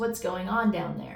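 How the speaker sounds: ordinary talk, nothing marked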